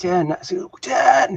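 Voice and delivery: high-pitched screaming.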